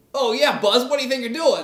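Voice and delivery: sarcastic tone with a very high-pitched voice. Retelling how an early version of Woody talked: sarcastic Woody voice. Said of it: "he was supposed to be sarcastic".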